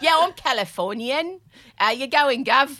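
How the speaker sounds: slow, plain, natural speaking voice. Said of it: "I'm [name]".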